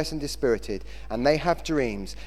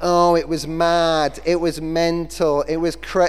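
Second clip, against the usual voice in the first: slow put-on Manchester accent, young man's voice; 6 dB louder than usual. Quoting a man from Manchester's answer to a question, in a Manchester accent. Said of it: "That was my Manchester accent".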